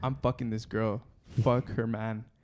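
ordinary talk

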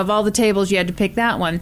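ordinary talk

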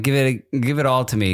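ordinary talk, nothing marked

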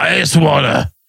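put-on mechanical, robotic electrolarynx voice-box voice. Retelling a man heard at night speaking through a voice box, electrolarynx voice. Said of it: "he had a voice box".

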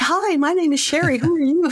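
very excited, high and eager voice.

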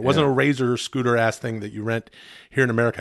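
ordinary talk, nothing marked

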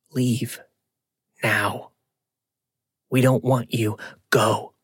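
raspy, hoarse stage whisper. Reading a story aloud, voicing an unseen presence: raspy whisper. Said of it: "I heard a raspy voice whisper".

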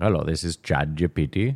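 Indian accent with call-centre-style delivery. Joking that ChatGPT sounds like a telemarketer, doing its cold call: ChatGPT telemarketer, Indian accent. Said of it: "you have to do it with an Indian accent".

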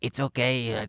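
put-on young boy voice. Retelling a twelve-year-old boy comforting someone crying, imitating Diego's raspy voice. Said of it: "who had a raspy voice".

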